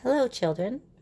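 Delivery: sugary, sweet, high voice. Reading a story aloud, a returning character greets the children: sweet voice. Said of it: "someone said in a sweet voice".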